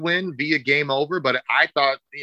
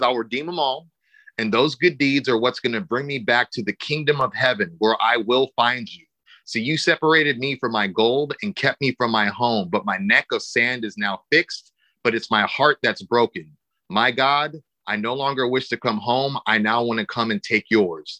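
ordinary talk, nothing marked

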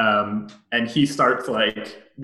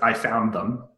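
choppy, halting broken English. Voicing a german soldier answering in broken english, pointing outside. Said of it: "in broken English".

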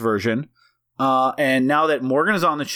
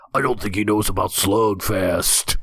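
hushed, put-on gravelly whispering character voice; 5 semitones lower than usual. Whispering a side remark in the bit voice: whispering in the slugfest voice. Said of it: "we're just basically doing the exact voice".

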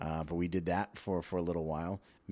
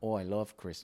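Upper Midwest Minnesota accent; 3 semitones higher than usual. Demonstrating the women they dressed up as, in a Minnesota accent. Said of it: "we have like Minnesota, accents".

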